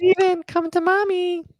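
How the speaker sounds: very high, creepy, eerie mother voice. Describing a creepy creature that lures people, as a creature mimicking a mom's voice. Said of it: "it calls out in your mom's voice".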